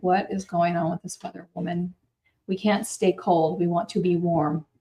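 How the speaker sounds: ordinary delivery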